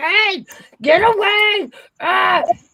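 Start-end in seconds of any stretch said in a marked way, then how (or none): 0.0-1.7 loud, high-pitched shout. Retelling chasing a raccoon from the trash: imitating someone shooing loudly. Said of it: "you're banging pans, like".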